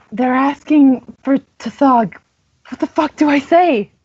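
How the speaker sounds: hushed whisper. In character, asking a companion what to answer, whispering. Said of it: "Yeah, I'm whispering".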